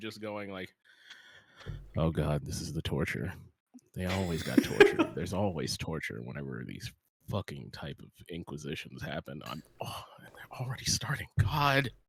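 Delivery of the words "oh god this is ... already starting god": low mumbling under the breath. Player voicing his character waiting out an inquisition, muttering under breath. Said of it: "I'm saying under my breath".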